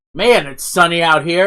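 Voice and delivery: grand, loud, announcing proclamation delivery. Player announcing before putting on rose-colored glasses, loud proclamation. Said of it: "I'm going to pronounce very loudly".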